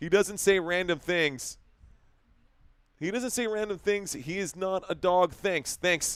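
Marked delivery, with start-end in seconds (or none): none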